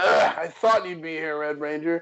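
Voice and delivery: mock irritated, exasperated, sick-of-you tone. Retelling a Power Rangers scene: imitating Magna Defender, pissed off. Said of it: "he's so pissed at him".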